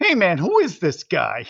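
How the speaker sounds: put-on flawless, perfect, natural American accent. Retelling a movie scene, quoting a gang member: imitating a perfect American accent. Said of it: "with a perfect American accent goes".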